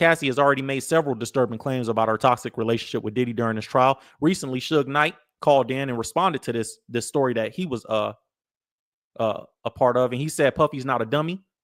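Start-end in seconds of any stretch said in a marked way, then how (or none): none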